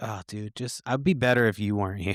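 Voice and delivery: ordinary talk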